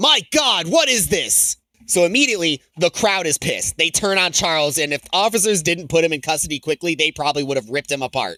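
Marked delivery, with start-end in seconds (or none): 0.0-1.6 slow, high, stretched-out, drawn-out shout. Narrating the shooting, acting out the president's words, retelling a shout. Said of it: "as Garfield shouts".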